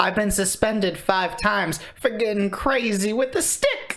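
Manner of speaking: rising pitch. Quoting a man's line as he said it, voice rising higher. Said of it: "And his voice goes up like that".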